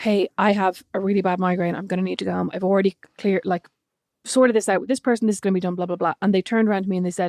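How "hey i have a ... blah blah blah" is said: ordinary delivery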